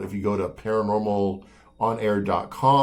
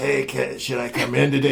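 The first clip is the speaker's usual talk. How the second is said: rough, creaky voice of a longtime smoker; 4 semitones higher than usual. Retelling how the sick co-host Kim asked whether to come in: imitating Kim's longtime smoker voice. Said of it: "She sounded like a, like, like a cocktail waitress from downtown".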